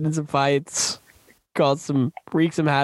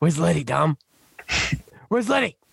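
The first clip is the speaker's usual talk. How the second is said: rough, rasping character voice with a creak. Asked by another speaker to say the line in character while discussing action scenes, in a Vince voice. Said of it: "Say it in your Vince voice".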